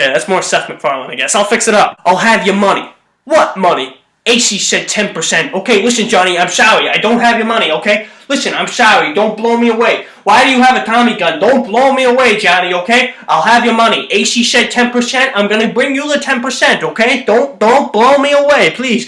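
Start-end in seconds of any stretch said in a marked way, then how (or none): 1.4-19.1 put-on vintage, old-timey 1930s film-actor delivery. Acting out a gangster scene, pleading with a man holding a Tommy gun, in an old-timey 1930s actor voice. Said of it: "old timey like nineteen thirties like actor's voice".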